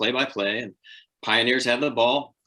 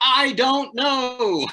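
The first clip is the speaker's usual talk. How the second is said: shrill, very high-pitched yelling; 13 semitones higher, 4 dB louder than usual. Retelling a broadcast mix-up, imitating own past yell into the microphone. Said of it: "I yell into the microphone".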